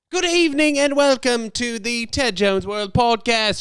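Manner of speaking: very high-pitched, put-on British accent. Opening the podcast with a joking welcome: put-on british accent. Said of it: "I am not a British guy who speaks like that".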